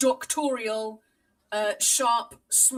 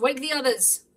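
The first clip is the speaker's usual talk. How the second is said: called out, in a character voice; 3 semitones higher than usual. Game master voices a character calling to the others: shouting. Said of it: "And Julian shouts".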